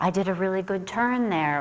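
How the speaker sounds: ordinary talk, nothing marked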